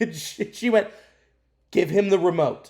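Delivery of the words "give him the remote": put-on stern mother voice. Retelling what their mom told a kid about the remote, imitating a stern mom. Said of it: "Just stern mom voice".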